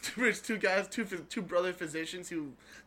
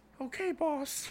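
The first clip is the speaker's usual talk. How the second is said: put-on high, small child's voice; 9 semitones higher than usual. Acting out a man answering his boss, in a high childlike voice. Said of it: "a really, like, high voice, almost like a child's voice".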